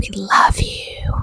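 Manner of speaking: slow, creepy ASMR-style whisper.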